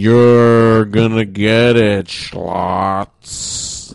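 put-on very slow, loud, sloppy, slurred drunk drawl. Retelling a movie scene where kids talk in slow motion: imitating drunk-sounding speech. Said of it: "they sound like they're super fucking drunk".

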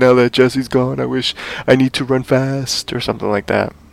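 soft, mopey, self-pitying whining voice.

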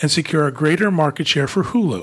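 usual speaking voice

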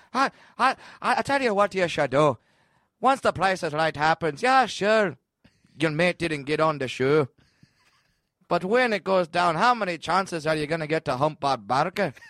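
put-on Irish accent, elderly male voice. Speaker voices what another person's inner voice said; Jameson voice. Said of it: "it sounded like old Irish guy".

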